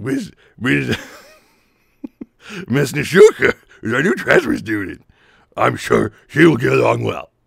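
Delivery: loud, rough teacher voice pushed out hard. Voicing the teacher character as Scooby Doo, as requested: Scooby Doo teacher voice. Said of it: "how does Scooby Doo talk as a teacher? He'd be like".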